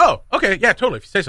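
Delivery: insincere, dismissive "yes". A speaker acts out someone's insincere reply to a threat; mock-sincere sarcastic agreement. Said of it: "that's it's never sincere. It's never genuine".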